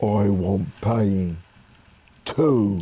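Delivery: husky-voiced troll. Narrator voicing a troll who grabs the player by the throat, Ivy's husky voice. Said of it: "says in a husky voice".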